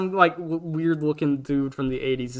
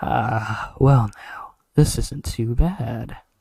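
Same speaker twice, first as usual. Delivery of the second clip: put-on smooth, aged gargoyle voice; 3 semitones lower, 4 dB louder than usual. Retelling how a relaxing character spoke, in a smooth old man gargoyle voice. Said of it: "in this really smooth old man gargoyle voice".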